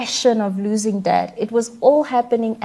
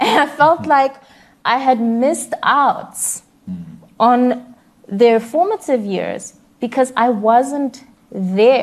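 heartfelt, deeply moved tone with feelings welling up; 3 semitones higher, 3 dB louder than usual. A parent talking about their children, getting emotional. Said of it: "and I'm getting emotional now".

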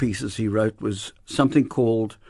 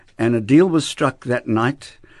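ordinary talk, nothing marked

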